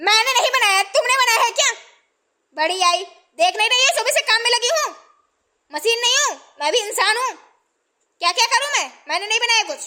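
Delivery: loud, high-pitched angry scolding outburst. A mother, asked to bring food for the aunt, answers the girl, speaking loudly. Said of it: "इतना तेज क्यों बोल रही हैं".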